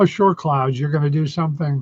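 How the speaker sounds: dry, mocking, disbelieving sarcasm. Retelling talking back to clouds that threatened rain: imitating own sarcastic remark. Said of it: "I just was sarcastic and going".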